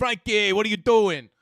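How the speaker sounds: put-on New York Long Island accent. Imitating how the speaker's dad talks: imitating dad's Long Island accent. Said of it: "they talk like this".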